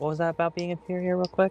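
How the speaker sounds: in-character half-whisper. Sneaking up invisibly on another character to speak: half-whispering in character. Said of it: "I'm just gonna whisper".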